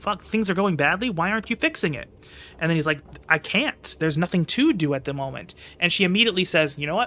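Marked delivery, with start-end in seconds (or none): none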